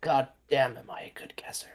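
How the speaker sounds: quiet whispered muttering under the breath. Speaking as Brenner, to himself, whispering under his breath. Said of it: "gonna whisper under his breath".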